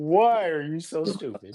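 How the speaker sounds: acted speaking while laughing. Retelling own words while crashing: retelling laughing while scolding oneself. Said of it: "even while I'm doing it, I'm laughing".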